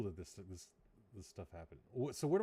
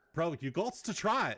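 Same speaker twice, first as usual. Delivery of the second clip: bad put-on Australian accent, louder, higher; 6 semitones higher, 6 dB louder than usual. Retelling a guy urging him to try a drink: horrible Australian accent. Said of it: "It's a horrible Australian accent".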